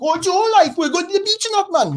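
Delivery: shrill, very high, loud put-on Essex accent. Mocking the accents heard in the Towie adverts: Towie accent impression. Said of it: "adverts for Towie".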